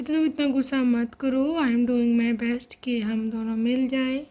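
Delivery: plain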